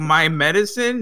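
ordinary talk

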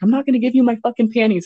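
put-on yelling. Telling a story, the speaker re-enacts yelling at a man who won't leave them alone. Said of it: "I think I yelled at him like".

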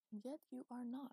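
soft, high half-whisper, barely a breath. A woman answering a man leaning on her who says he failed, half-whispered. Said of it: "she whispered".

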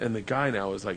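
ordinary talk

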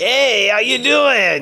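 Italian mafia voice. Describing the goblins of a fantasy world, in an italian mafia voice. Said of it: "like Italian mafia voice".

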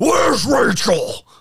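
very high, heroic, superhero-style voice. Giving the requested line in a Batman voice. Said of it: "will you give me a, "Where's Rachel?"".

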